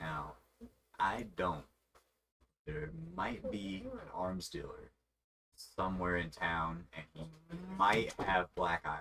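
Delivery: hushed close aside. Voicing a general goods seller who leans into your ear; hushed, leaning in. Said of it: "he leans down into the into your ear".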